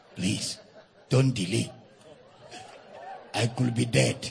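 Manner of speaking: hushed, secretive whisper under the breath. Retelling a frightened church member's phone call: imitating a whisper. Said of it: "the man was whispering".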